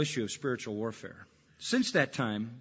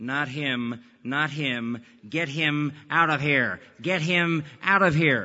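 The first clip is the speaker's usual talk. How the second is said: slow, alien, possessed-sounding demonic voice; 4 dB louder than usual. Speaker retells a girl with a glassy stare speaking about him: retelling a voice not her own. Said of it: "in a voice that wasn't her own".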